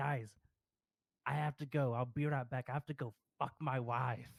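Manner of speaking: put-on thick Boston accent. Retelling what a guild member said after a raid wipe: imitating a thick Boston accent. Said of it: "the thickest Bostonian accent".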